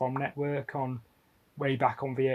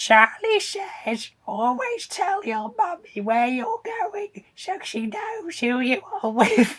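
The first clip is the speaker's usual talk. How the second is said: terrible, high, loud voice that cracks; 7 dB louder than usual. Quoting an old public information film in a terrible impression. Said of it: "that was a terrible impression".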